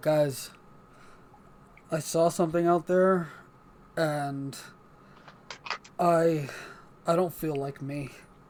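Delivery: soft, eerie, dead-level, unsettling monotone. Retelling how a changed character now speaks to the others, super monotone. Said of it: "But now it's super monotone".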